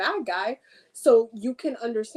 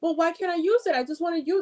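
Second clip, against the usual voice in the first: high, mock fed-up, frustrated tone; 7 semitones higher than usual. Retelling saying no to her, the speaker quotes her asking again: imitating someone frustrated. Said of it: "she would just like get frustrated with me".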